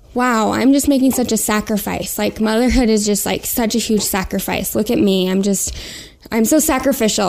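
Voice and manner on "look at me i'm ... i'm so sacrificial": ordinary talk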